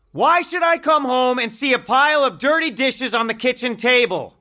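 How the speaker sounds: high, loud, furious yelling. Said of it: "Don't shout".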